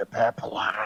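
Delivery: whispering. Playing a character turning around to a companion, whisper. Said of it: "turn around and whisper to Rin".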